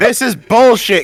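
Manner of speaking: high yell, shouted from a distance. Playing Kane outside the church, yelling: yelling from outside. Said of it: "Kane's gonna yell from outside the church".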